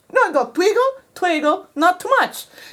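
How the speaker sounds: fake Italian accent. Retelling someone's vague instructions, in a bad italian accent. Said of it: "I'm going to do a very bad Italian accent".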